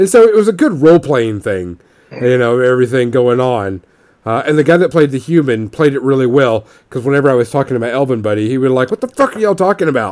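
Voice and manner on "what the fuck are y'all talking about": high, raised, shouted outburst. Retelling how a role-playing player yelled at two elves talking: imitating someone yelling. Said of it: "Why is he yelling at us?".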